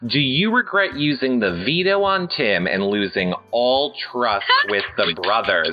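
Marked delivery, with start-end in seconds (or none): none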